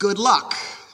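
hushed stage whisper. Retelling how the groom's father handed the cup over: imitating a stage whisper. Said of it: "and in a stage whisper said".

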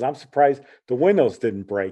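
ordinary talk

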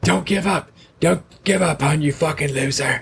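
put-on raspy voice. Giving advice about a career in comedy, switching into a put-on raspy voice. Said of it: "That's my raspy voice".

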